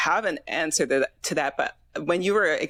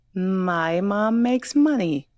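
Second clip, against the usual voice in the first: sing-song, lilting speech. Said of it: "sing-song speak the rest of it".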